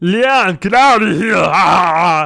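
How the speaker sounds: very loud, very slow bellow with drawn-out ah. Imagining someone running at a coworker with a sword: Arnold impression. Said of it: "good Arnold impression".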